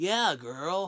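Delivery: put-on valley girl style of speaking.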